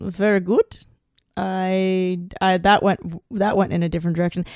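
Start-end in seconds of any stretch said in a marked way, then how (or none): 0.0-0.8 clumsy, bad put-on French accent. Playing a character answering about memory: bad French accent. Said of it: "I can't do a French accent, but I'm doing it".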